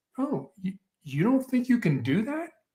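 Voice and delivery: high, curious, inquisitive, wondering tone. Hostage negotiator training example of a reply, curious questioning tone. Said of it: "Use your curious voice".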